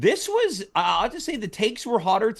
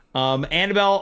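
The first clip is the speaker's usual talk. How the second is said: ordinary talk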